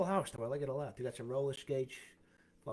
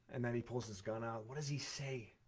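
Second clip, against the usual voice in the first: usual speaking voice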